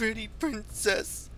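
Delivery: put-on high, slow, sobbing goblin child voice.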